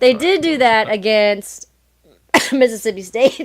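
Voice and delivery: voice breaking up mid-line. Recapping a team's games with another speaker, voice cracking. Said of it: "See, my voice is cracking".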